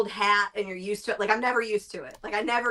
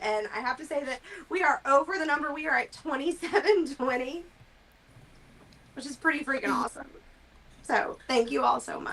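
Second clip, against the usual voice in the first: emotional, choked up, voice catching and pitched high; 5 semitones higher than usual. Addressing everyone supporting the charity, choked up. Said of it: "I'm getting choked up".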